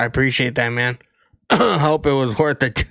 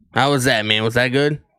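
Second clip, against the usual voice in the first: usual speaking voice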